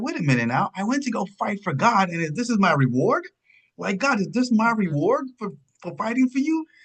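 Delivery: put-on angry outburst. Retelling a character finding his wife dead: imitating an angry outburst. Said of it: "he is so pissed".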